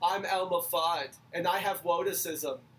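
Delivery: slow cartoon speech-impediment voice.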